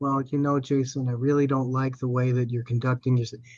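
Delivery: low, very soft, passive-aggressive tone. Showing how a weak man might confront Jason: low, soft, passive-aggressive. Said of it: "Very low, very, very soft, very passive aggressive, very indirect".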